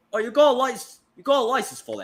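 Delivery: put-on Australian accent. Trading accent attempts in a group, one speaker tries it: Australian accent. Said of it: "speaking in Australian accent".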